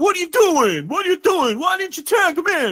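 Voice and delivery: acted-out yelling. Recounting a tag-team match, quoting one brother to the other: retelling a yell. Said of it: "I'm just screaming at my TV".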